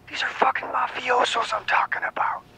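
paranoid, high, hushed whisper. The narrator's brother speaks on the phone, whispering. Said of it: "he whispers".

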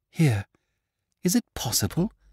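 high, pained gasp, almost in pain. A man feels a paper hidden inside a binding and gasps: gasping, almost in pain. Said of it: "in an accent almost of pain".

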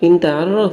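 pushed, question-like intonation. Teaching an Arabic phrase meaning 'you know': pushed questioning intonation. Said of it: "এরকম ধাক্কা দিলে একটা প্রশ্নের মতো উচ্চারণ হবে".

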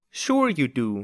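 contemptuous, scornful, sneering tone. [name] answers someone while talking about the grown-ups: sneering. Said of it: "sneered [name]".

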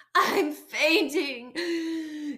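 words caught on a gasp, breathless. Frank the fox, fleeing the farmyard with his family: gasping. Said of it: "gasped Frank".

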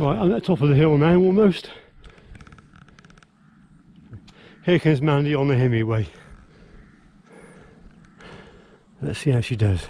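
short of breath, winded. Speaker at the top of a steep hill, watching Mandy ride up: out of breath. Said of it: "I'm a bit out of breath".

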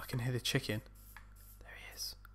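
quiet whispering. Player in a game hears a chicken nearby and starts whispering. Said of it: "I don't know why I'm whispering".

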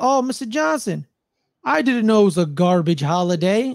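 put-on condescending voice. Quoting a scene where Mr. Day addresses Mr. Johnson, imitating Mr. Day's condescension. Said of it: "the condescension in Mr".

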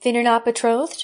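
plain reading voice

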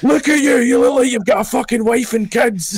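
mock shouting, pitched very high. Retelling a story, acting out a coach who shouted at a young player. imitating a coach shouting. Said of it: "like fucking shouting".

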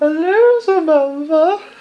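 creepy panda puppet voice, high-pitched and slow. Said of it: "making it all creepy and going".

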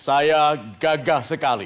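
deep, dashing, gallant full chest voice. Showing a man addressed as Pak the intended voice: deep, dashing chest voice. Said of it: "Yang gagah, yang dalam, dada dibesarkan".

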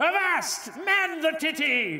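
put-on pirate voice. In a group talk about pirates, acting out what a pirate says: pirate voice. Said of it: "like when a pirate says like".

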